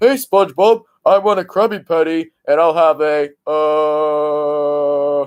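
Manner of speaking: slow, dopey cartoon voice, stretched uh. Speaker showing off how good they are at doing the voice of Patrick: Patrick voice. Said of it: "I'm really good doing the voice of Patrick".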